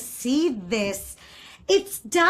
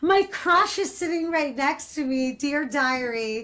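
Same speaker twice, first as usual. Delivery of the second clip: usual speaking voice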